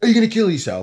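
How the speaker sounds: high, loud, blunt blurt. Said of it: "steaming in and going".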